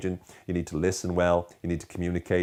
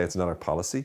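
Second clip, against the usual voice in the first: ordinary talk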